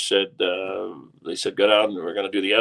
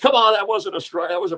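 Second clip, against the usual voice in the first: mock yell, much higher; 12 semitones higher than usual. Retelling how a man jumped up at a Cubs game, retelling a yell. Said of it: "he jumps up and yells".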